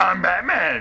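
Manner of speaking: growling monster voice. Quoting a line, the speaker does a Batman voice like Cookie Monster. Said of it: "You sound like Cookie Monster".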